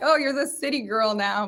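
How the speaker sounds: ordinary talk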